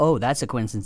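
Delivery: imitated heavy sarcasm. Retelling own reply to a woman in a conversation, even more sarcastically. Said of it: "even more sarcastically".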